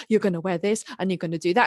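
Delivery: mock gentle, kindly, really sweet tone. Retelling a young sister's advice to a new convert: imitating a really nice tone. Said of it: "a really nice way".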